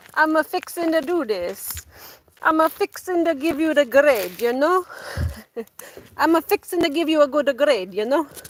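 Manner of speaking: put-on heavy, high-pitched Caribbean island accent. Retelling how a teacher from the islands talked: imitating a teacher's strong island accent. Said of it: "she had a very strong accent from the islands".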